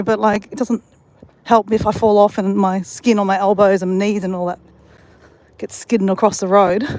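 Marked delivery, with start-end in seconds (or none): none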